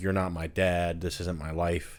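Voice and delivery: ordinary talk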